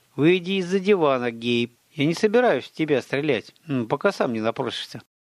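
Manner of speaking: ordinary delivery, nothing marked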